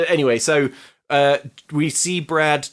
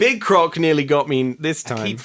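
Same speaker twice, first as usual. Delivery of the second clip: plain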